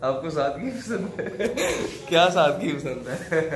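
slow, laughing, teasing tone.

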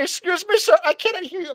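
put-on very high-pitched voice with Indian accent. Retelling a fight story, quoting a bystander, imitating the Indian lady. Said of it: "the Indian lady is like".

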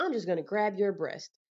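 ordinary delivery

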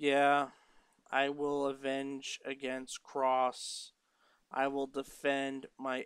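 mock-bored delivery. Mocking a promo that sounded bored, imitating a bored promo. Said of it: "Impact just sounded bored during this promo".

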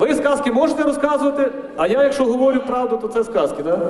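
ordinary talk

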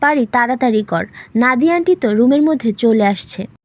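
ordinary talk

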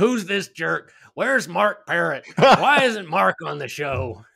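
high, grouchy, griping tone. After admitting being paid to read books, voicing David Letterman's grouchy viewer impression. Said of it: "your impression of David Letterman's impression of a grouchy viewer".

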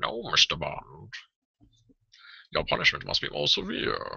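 put-on rough, growling, swooping movie-villain voice. Imagining a Bond villain line: Bane voice as Bond villain. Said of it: "I want to do the Bane voice as a Bond villain? Like".

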